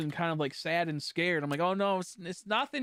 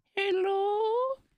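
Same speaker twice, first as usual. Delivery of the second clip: put-on mimicked little old lady voice, much higher pitch. Retelling a man answering the receptionist desk phone, little old lady voice. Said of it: "He got like a little old lady voice".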